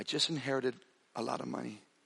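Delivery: very soft, hushed, confiding voice. Retelling what he half-whispered in the speaker's ear over a guitar: imitating a half-whisper. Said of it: "he whispered in my ear and he goes".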